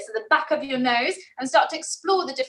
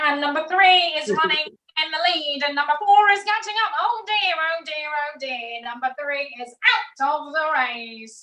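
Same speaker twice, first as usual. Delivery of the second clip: put-on nasal race-caller voice; 3 semitones higher than usual. Demonstrating a nasal quality for the group to practise, nasal jockey voice. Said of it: "sounds like a bit of a jockey".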